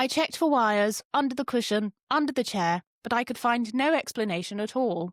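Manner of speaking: poshest upper-crust voice, laid on very thick. Retelling a woman's account from a news report in her voice: very posh voice imitation. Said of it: "so I'm going to replicate her voice".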